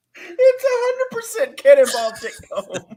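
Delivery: high, loud, hysterical laughing.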